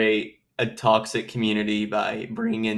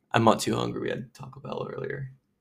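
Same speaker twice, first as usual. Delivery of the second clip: quiet, hushed, sultry, seductive tone. Answering about not being hungry after Taco Bell, seductive quiet tone. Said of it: "Don't say that so, like, seductively".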